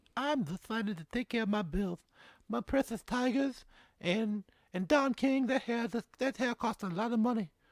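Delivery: very high, shrill, very loud put-on character voice. Repeating a quote from Mike Tyson in a Mike Tyson voice. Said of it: "doing Tyson voices".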